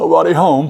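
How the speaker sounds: acted tearful choking up. Retelling a man leaving his family home: imitating a man choking up. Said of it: "he's starting to crack up".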